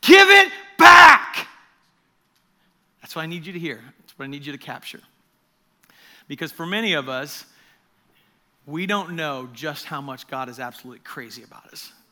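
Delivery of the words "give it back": shrill, very high, very loud, intense urgent shout. Speaker addressing listeners, showing the intensity they should hear in the message, intense yell. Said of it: "I want you to hear today through this whole message".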